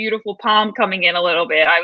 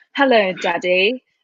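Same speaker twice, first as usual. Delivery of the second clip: put-on British accent. Asked to do it, quoting a character's line in a British accent. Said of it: "it's a totally British accent".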